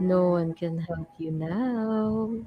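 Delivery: whispering menacingly. Whispering into a captive's mind with a spell: whispering menacingly. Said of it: "I'm gonna start whispering".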